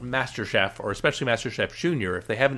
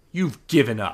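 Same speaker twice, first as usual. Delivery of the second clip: put-on contemptuous voice; 4 dB louder than usual. Complaining about a cooking show, quoting Gordon Ramsay's go-to line, mock-contemptuous Gordon Ramsay. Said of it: "he always says it with this contempt in his voice".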